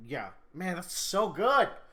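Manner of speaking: loud, gushing, thrilled yell rising in pitch. Recapping a favourite story scene to another speaker, yelling excitedly. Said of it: "sorry for yelling".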